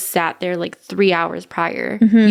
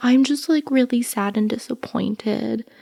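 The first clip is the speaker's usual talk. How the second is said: fake, sugary sweet put-on voice; 3 semitones higher, 3 dB quieter than usual. Recalling how people spoke to them once they became a manager: mimicking a fake sweet voice. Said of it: "use their sweet voice and be like".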